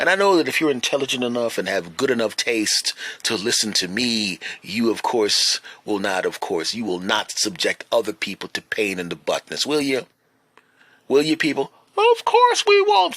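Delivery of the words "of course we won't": very high voice, like a crowd. Answering his own question as if he were the listeners: high voice. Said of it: "speaking in a high voice".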